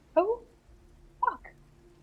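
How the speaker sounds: very high, small muttering to oneself. Testing whether they can speak, muttering to themselves: very quiet, to oneself. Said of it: "very quietly to myself go".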